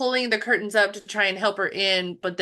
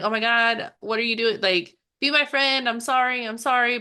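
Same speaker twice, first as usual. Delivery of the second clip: put-on panicked, freaking-out voice; 2 semitones higher than usual. Retelling a movie scene where a character begs a friend: imitating someone freaking out. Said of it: "freaking out, being like".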